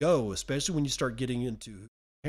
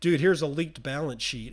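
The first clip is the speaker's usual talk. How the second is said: ordinary talk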